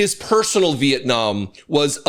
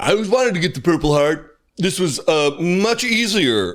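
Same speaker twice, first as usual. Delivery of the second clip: smug, self-satisfied, boastful tone; 3 semitones higher than usual. Speaker repeats a man's words, then calls him a moron: mock-smug imitation. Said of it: "he says smugly".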